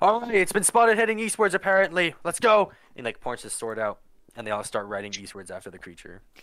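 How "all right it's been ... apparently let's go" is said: very high, loud, commanding barked yelling. Voicing a commander pacing around his horse, yelling at riders: commander yelling orders. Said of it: "yelling at".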